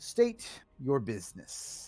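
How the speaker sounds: monstrous, bestial monster voice. Voicing a bestial face on a tower that questions visitors: bestial tower face voice. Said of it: "this bestial-looking face sort of extends from the tower and says".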